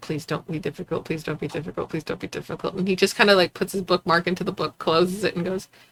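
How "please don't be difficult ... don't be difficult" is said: put-on muttered plea, much quieter and lower. Describing an english professor seeing a student approach, imitating the professor's muttered plea. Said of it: "You could see him kind of just going like".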